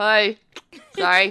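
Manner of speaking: very loud, blurted through a mouth full of food. Greeting the group in character as Kepri, talking with mouth full. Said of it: "Kepri has food in her mouth".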